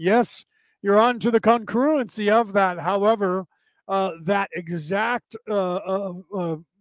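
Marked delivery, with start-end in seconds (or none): 0.0-2.8 put-on sardonic, cheeky, snarky, sarcastic tone. Retelling what Ra said about the Bible quote: imitating snarky Ra. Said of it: "there was snarky Ra going".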